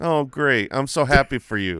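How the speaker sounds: insincere, not actually happy tone. Reacting to another speaker having two top players, sounding not actually happy. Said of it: "You sound like you're not actually happy".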